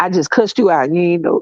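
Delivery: Southern drawl, voice dropped. Showing how talking shit sounds: Southern drawl with voice dropped low. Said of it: "I hit that Southern drawl".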